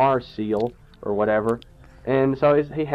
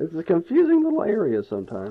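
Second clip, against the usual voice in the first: breaking, cracking voice mid-line; 3 semitones higher than usual. Player realizing they are going the wrong way, voice cracking. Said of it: "My voice cracked".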